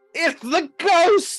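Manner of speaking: shouting in a character voice. Playing a character who sees a ghost at the door: in-character shout. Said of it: "I shout".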